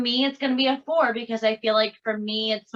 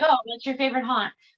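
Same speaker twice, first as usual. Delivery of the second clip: ordinary talk, nothing marked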